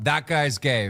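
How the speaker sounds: blurted out loud in a jeering heckler voice.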